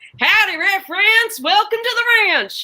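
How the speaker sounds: put-on western ranch-hand cowboy accent. Showing how the new choice game works with a greeting: cowboy accent. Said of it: "this cowboy, uh, accent would have to stay there".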